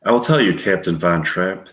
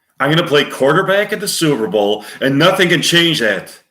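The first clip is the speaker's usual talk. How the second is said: angry, pitched-up, raised delivery; 8 semitones higher, 4 dB louder than usual. Acting out scene one as Warren Beatty, mock-angry Warren Beatty line.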